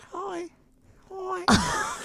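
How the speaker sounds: put-on high, soft little-boy voice. Talking about how David Beckham sounds, the speaker does a David Beckham impression. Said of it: "It's very high".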